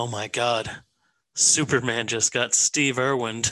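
whispered delivery. Retelling what Ben whispered in a movie theater: imitating Ben's whisper. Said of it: "he whispered in my ear".

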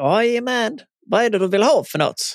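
put-on Scanian accent. Retelling calling the mail-order seller: imitating Mats, broad Scanian accent. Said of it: "på god skånska".

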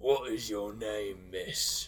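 deep, gruff voice. Narrator voicing the captain asking a woman her name, deep, gruff voice. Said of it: "in his deep, gruff voice".

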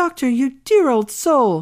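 loud, high, mischievous and merry cry. The young widow calls to the old doctor to dance; cried out with mischievous merriment. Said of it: "cried she".

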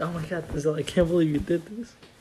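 plain

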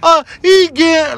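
put-on high, loud, slow child's shout.

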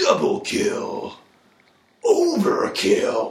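calling out in a high pitch. Naming a favorite game announcer, doing the Halo announcer voice. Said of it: "would be the Halo announcer".

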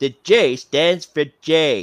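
dim-witted cartoon father voice. Showing off impressions in their vocal range, Homer Simpson impression. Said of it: "don't forget about Homer J".

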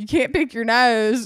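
put-on played-up campy Southern accent.

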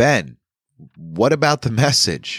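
firm, abrupt, very high-pitched voice. The narrator interrupts a man mid-explanation, firmly cutting him short. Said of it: "I said firmly".

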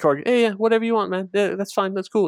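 high-pitched, sweet, agreeable, super-nice tough-guy voice. Describing strong guys who are always super nice; imitating high-pitched tough guys. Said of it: "had these high pitched voices".

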